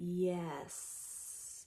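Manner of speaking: very quiet, slow, long drawn-out word. Imitating how a woman says it: quiet, drawn-out yes. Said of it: "as if she's saying it like this. ... very drawn out, ... very quiet yes".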